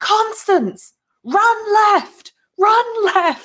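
slow, drawn-out, very loud, high-pitched full-volume scream. Voicing Magia warning Constance amid thunder blasts, screaming at top of voice. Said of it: "at the top of her voice just shouting".

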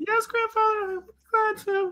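tiny, faint, very high little voice. Answering Grandfather's call from another room, as Elizabeth in a little faint voice. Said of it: "you hear a little faint voice that says".

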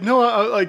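loud, high-pitched insistence. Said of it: "she's like".

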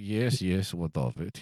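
put-on very slow, low, dry, droll Eastern European accent. Retelling a catering server's reply to the speaker and a friend, droll eastern european accent. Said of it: "in that kind of droll Eastern European way".

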